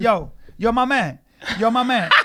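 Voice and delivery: slow, put-on street-slang voice. Interviewing a guest, trying to sound street: put-on street talk. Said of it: "I'm trying to be, like, all street".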